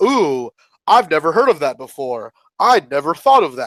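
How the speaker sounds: put-on, very sarcastic, playful teasing tone. Retelling how Brian Flynn answers fan ideas: imitating Brian Flynn sarcastically teasing. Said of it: "kind of in a very sarcastic way".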